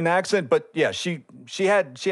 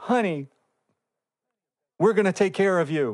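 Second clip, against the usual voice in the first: play-acted sugary, sweet, caring, kindly tone; 4 semitones higher than usual. Retelling how the staff in the back talk to patients, mimicking staff's nice voice. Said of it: "they talk in that nice voice".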